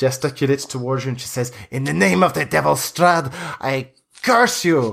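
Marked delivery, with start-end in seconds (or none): 1.7-4.9 high voice in complete rage. Narrator voices a woman cursing strad for being in her sister's room, enraged. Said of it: "complete rage on her face".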